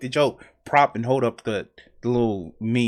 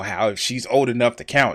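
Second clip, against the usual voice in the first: plain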